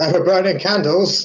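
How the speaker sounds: shouting. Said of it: "I shout".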